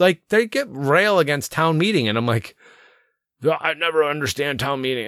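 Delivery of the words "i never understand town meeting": ordinary talk, nothing marked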